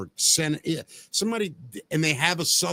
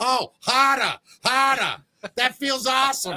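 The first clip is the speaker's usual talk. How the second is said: woman's put-on Boston accent, pitched up; 9 semitones higher, 4 dB louder than usual. Discussing a movie scene, imitating a Boston woman in a put-on Boston accent. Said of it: "hear a Boston woman have an orgasm".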